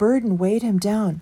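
ordinary delivery, nothing marked

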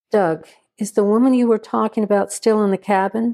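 ordinary delivery, nothing marked

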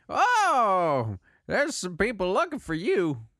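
put-on high, swooping, sing-song old-man voice, "oh" drawn out. Voicing Ramney, an old man, talking to the players: Ramney voice. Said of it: "I hope this was my Ramney voice".

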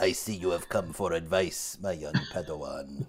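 pitched very low, almost under the breath. Picking a character to voice, a player speaks as Emperor Palpatine. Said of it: "Emperor Palpatine".

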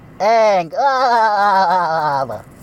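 very high, loud shout with stretched "ah". Doing an impression of SpongeBob meeting Aang for the first time, exclaiming. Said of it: "here's my impression of SpongeBob meeting Aang".

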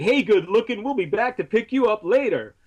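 high street yell. Retelling a tv commercial where a guy in a car talks into a microphone: imitating someone yelling. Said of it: "and he's yelling".

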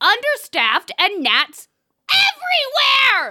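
put-on furious shouting. Reading a one-star review aloud in an impression of the co-host: put-on enraged yelling. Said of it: "I'm sorry I yelled so much".

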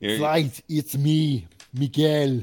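put-on Austrian accent on the whole line. Introducing himself by the new name just chosen, Austrian accent. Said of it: "you said it with an Austrian accent".

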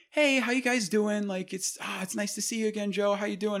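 happy-go-lucky, very high, cheerful voice. Retelling how a father usually greets people: imitating dad's usual happy-go-lucky greeting. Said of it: "he's usually just like".

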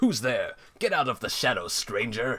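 wooden, stiff, canned video game guard voice. In a story, Silver calls into the shadows in an Oblivion NPC voice. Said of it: "with the Oblivion NPC dialogue says".

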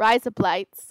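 attempted Australian accent. Trying out an Australian accent on a single phrase: Australian accent. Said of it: "Should I try and do an Australian accent?".

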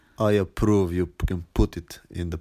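loud, heavy, thick Slavic accent laid on thick. Repeating an approval on request, as an inside joke: thick Slavic accent. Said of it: "a bit more with a thick Slavic accent".

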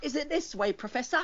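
put-on very high, squeaky cockney street-kid voice. Describing a character named Luke and how he always talks: Luke's poor street-kid voice. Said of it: "he talks like that all the time".

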